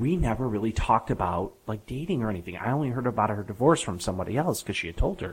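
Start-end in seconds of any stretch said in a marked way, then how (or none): none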